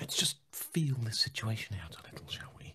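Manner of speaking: soft, breathless whisper.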